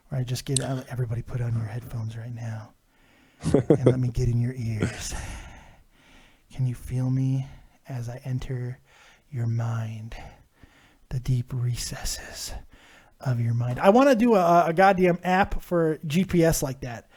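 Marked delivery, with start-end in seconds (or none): 0.9-13.8 put-on hushed, seductive, intimate half-whisper. Showing a half-whisper bit done earlier on a stream: half-whispering bit. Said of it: "my whisper bit".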